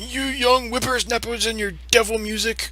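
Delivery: high, cranky put-on old man voice. Speaker shows the bit they do at work, in an old guy voice. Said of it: "I'll actually get the old guy voice".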